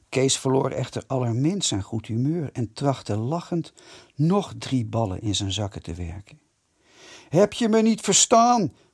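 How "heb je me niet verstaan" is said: loud, high-pitched roaring bellow. Narrator reads the officer repeating his question once more, bellowing. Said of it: "bulde de biertel nog eens".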